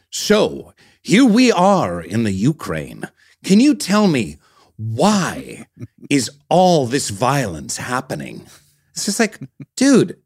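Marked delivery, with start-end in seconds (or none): 0.1-8.4 slow, sing-song broadcast reporter newscaster cadence. Complaining about how an interviewer talks, show him talking like a newscaster. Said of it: "talk like a newscaster and be like".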